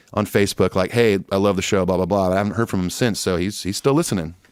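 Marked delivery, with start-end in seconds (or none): none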